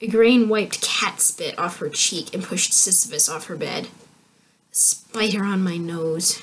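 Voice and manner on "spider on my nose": grumbling, mumbled. Igraine mutters as she pushes the cat away and throws back the covers. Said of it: "she muttered".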